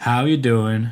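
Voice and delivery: put-on Southern accent. Two presenters opening the WWDC keynote, greeting each other in a fake Southern accent. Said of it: "Why are we talking like this?".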